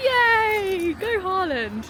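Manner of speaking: high, loud, sarcastic cheer.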